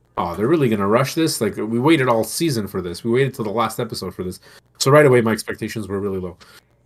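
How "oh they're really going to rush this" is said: ordinary talk, nothing marked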